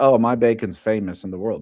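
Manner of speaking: ordinary delivery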